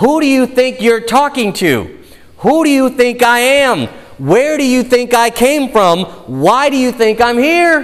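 snide, needling tone. Retelling a Bible story where Gabriel answers a doubter, mock-snarky Gabriel retort. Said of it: "replied with a bit of a snarky tone in his voice".

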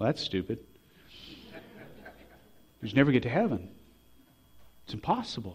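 soft, gentle, loving delivery. Retelling Robin's comment, said very lovingly: Robin's gentle voice. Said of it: "with her gentle voice".

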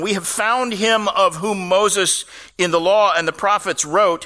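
ordinary talk, nothing marked

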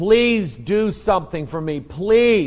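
acted screaming and begging. Recalling being held down after an injury, retelling screaming and begging. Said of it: "I was screaming, begging them".

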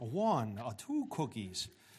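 slow voice with swooping pitch. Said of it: "Sound like the Count from, uh, Sesame Street".

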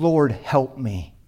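put-on pleading tone. Speaker addressing the brethren acts out a woman's words to the lord, retelling a plea. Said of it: "she just pleads".

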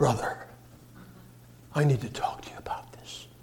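reverent, hushed, spiritual-sounding near-whisper. Describing people who try to talk spiritual with him: mimicking a hushed spiritual tone. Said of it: "Is that hushed tone?".

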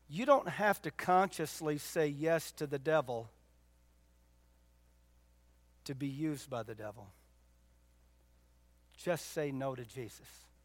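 slow, deliberate, drawn out word by word. Addressing an audience on the balcony and lower level: slow and deliberate. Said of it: "Did I say that slow enough".

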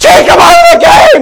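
shrill, high-pitched yelling. Parent retelling how their son screamed at the team during a game, imitating someone screaming. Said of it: "he's screaming at the team".

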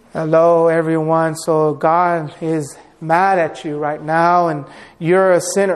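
flat monotone reading with no rising pitch. Acting out Jonathan Edwards reading from a manuscript: Jonathan Edwards monotone.

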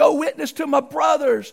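mock beseeching, high, begging pleading cry. Acting out a man in hell begging: imitating a begging plea. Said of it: "He's begging".

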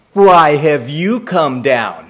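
mock sarcastic delivery. Acting out an older brother's question to his younger brother: imitating a sarcastic tone. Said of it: "you get the sarcasm".

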